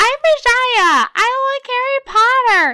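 Nepali accent, slow and booming. Among friends trading accents, one steps up to try: Nepali accent. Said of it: "That's my Nepal accent for you".

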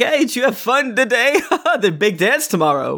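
put-on tipsy professor, very high-pitched. Voicing a professor leaning in, breath strong of booze: drunk professor voice. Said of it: "his breath is very strong of, of various types of booze".

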